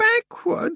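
feeble, weak, very high muttering. A woman echoes the girl's word back, muttering weakly. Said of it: "Muttered Anna Grammer weakly".

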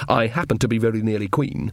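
usual speaking voice

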